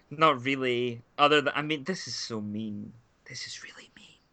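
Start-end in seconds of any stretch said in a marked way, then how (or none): 1.8-4.0 soft, slowed, guilty whisper. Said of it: "I'm not gonna whisper it".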